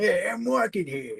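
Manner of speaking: laid-on New Yorker accent. Showing the others what a New York accent sounds like, New York accent. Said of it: "it was going to be like a like a New Yorker accent".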